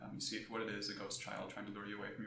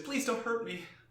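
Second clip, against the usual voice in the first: put-on very high-pitched small child's voice; 14 semitones higher, 11 dB louder than usual. Voicing a doll speaking as it is grabbed: childlike voice. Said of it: "you hear a childlike voice say".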